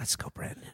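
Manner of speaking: soft, breathy whisper, very close. Joking about what gets said into a friend's ear: whispering. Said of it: "I just whisper".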